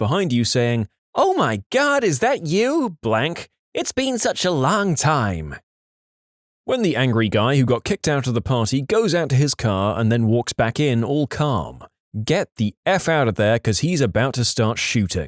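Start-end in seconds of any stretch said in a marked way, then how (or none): 1.1-5.6 loud, high, slow obnoxious voice. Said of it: "a loud, obnoxious voice behind you saying".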